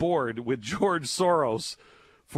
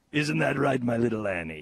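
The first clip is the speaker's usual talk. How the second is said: small, cutesy, tiny little-guy voice. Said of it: "I don't know why I sound like him right now".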